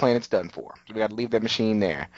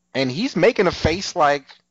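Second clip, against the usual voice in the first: ordinary talk, nothing marked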